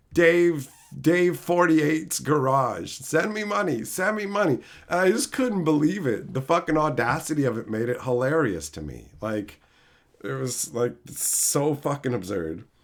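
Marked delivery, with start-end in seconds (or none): 0.1-4.5 put-on yelling, higher. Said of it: "just yelling at the stream".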